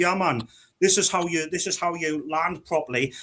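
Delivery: put-on Geordie accent, laid on strong. Retelling how a man from their group talked after training school: imitating strong Geordie accent. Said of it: "his strong Geordie accent".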